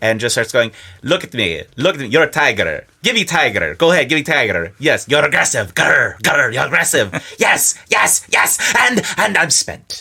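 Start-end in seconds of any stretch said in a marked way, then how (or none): 1.0-10.0 put-on swooping Central European accent. Retelling how the photographer urged him on, in a full central european photographer voice. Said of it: "goes into a full Central European photographer voice".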